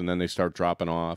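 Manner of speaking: ordinary talk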